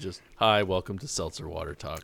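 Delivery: dead level monotone with no changes in tone. Pitching a mock seltzer podcast intro to co-hosts, in a monotone. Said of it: "We're all monotone".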